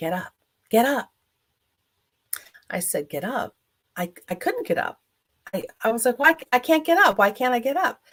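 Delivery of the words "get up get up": very loud calling voice. Retelling waking up to a voice in the morning, doing a very loud voice. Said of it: "I heard a very loud voice say".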